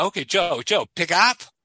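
broken English, woman's voice. Retelling what a girl at the counter said: imitating broken english. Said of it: "she spoke broken English".

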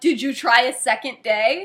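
heated, forceful speech. Retelling an annoyed reply about a movie, imitating own intense reply. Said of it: "getting a little intense like that".

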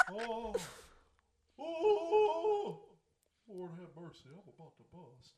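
very loud, very slow swooping exclamation. Showing another speaker a Hank Hill impression. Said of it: "my Hank Hill impression".

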